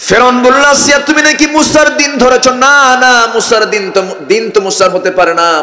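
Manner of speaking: impassioned, fervent preacher-style cry.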